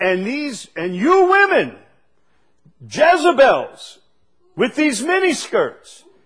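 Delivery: mock thunderous preacher voice. Retelling what the man on the tape said, the speaker imitates a thunderous preacher. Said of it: "in a thunderous voice".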